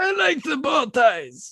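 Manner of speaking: harsh, strained, throat-scraping character voice. Answering a question about favorite pasta while playing Watto, in Watto voice. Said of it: "my throat hurts just listening".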